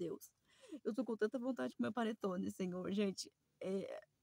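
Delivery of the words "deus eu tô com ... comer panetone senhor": put-on childlike crying, pleading through tears. Retelling a past prayer to God, reenacting crying like a child. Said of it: "eu chorei que nem criança falando".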